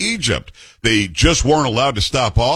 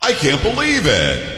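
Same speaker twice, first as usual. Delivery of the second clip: thick, heavy, mocking, drawn-out sarcasm; 4 semitones higher than usual. A radio host reads out the name of a news file, very sarcastic. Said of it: "Being very sarcastic".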